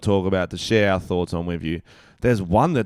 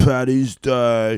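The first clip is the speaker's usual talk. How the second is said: mock accusing tone, higher and louder; 4 semitones higher, 5 dB louder than usual. Acting out a teammate's accusation at a kangaroo court: imitating a footy teammate. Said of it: "That's a pretty spot on impression".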